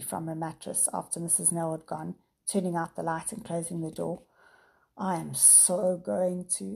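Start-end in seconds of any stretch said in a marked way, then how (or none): 5.0-6.8 sleepy, drowsy, much slower. Narrator reads a character's reply to a goodnight wish, sleepily. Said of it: "Sam said sleepily".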